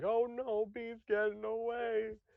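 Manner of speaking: very high, very slow, drawn-out alarmed yell. Recounting what he yelled while running, retelling a yell. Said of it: "I was yelling".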